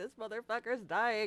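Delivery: mock tearful, crying delivery. Retelling watching a character die in a game: imitating own crying. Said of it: "I'm sitting here crying as I'm like".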